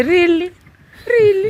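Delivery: high, incredulous "really". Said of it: "we look at you and say".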